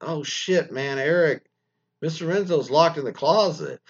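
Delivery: acted-out anxious, uneasy, nervous, worried tone. Retelling telling a coworker someone is locked in: imitating own nervous voice. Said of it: "I say it nervously".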